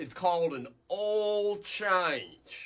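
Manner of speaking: painfully slow, drawn-out, word-by-word, condescending delivery. Speaking to a woman about her husband's vehicle, saying it real slow. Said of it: "I'm going to say it real slow for you".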